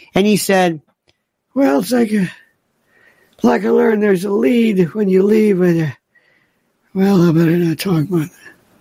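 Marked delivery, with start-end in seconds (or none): 1.6-8.5 put-on frail old man voice, voice giving out. Retelling what Joe Biden said, in a Joe Biden old man voice. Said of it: "that old man kind of voice, where you lose your voice".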